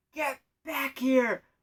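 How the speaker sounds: all-out high yell at the top of lungs. Retelling a screener calling back across a crowded building, imitating a top-of-lungs yell. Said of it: "yells at me ... top of her lungs".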